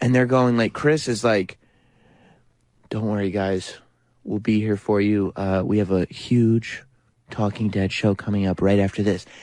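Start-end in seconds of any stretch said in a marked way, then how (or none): 2.9-9.2 soft, somber, lower put-on announcer voice. Imitating a TV host's commercial, speaking softly and somberly. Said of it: "speaking so softly".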